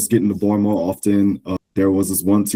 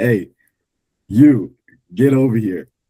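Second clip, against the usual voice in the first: put-on yelling call, light, carrying as if over distance; 2 semitones higher than usual. Retelling how a man yelled to them across the field: imitating someone yelling. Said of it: "he was just yelling like".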